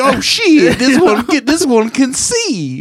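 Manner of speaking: very high, slow, put-on gray alien voice. Joining a joke about an alien in a do-rag: voicing a gray alien in a do-rag. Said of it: "He's like".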